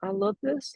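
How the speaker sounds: unsure, hesitant, questioning tone, very high. Showing how not to say a phrase: hesitant, questioning. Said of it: "No, no questions".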